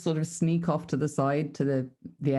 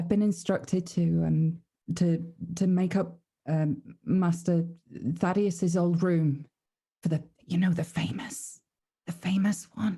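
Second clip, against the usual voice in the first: confiding stage whisper, in character; 3 semitones higher than usual. Half-whispering in character to a maid about preparing a room: half-whispering to a maid. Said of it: "I'll whisper to the, uh, to the maid".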